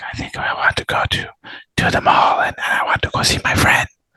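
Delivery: barely audible, faint, whispered murmur. Imitating a call partner's bad microphone: imitating a faint, low voice. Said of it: "sometimes it's really low".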